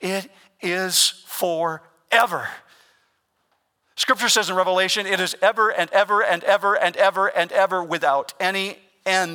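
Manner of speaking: voice cracking and breaking with feeling. Preaching to the church that hell is forever, with a broken voice. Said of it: "If you hear a brokenness in my voice".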